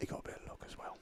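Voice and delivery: secretive, hushed, soft, breathy whisper. Commenting on a player's luck to another commentator: whispering. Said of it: "Why'd you whisper that?".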